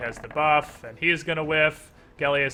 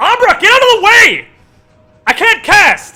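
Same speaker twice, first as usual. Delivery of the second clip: shrill, very loud, high-pitched panicky yell; 15 dB louder than usual. In a tabletop game, the speaker voices a character warning Abra, slightly more panicked yell. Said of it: "she yells out in a slightly more panicked voice".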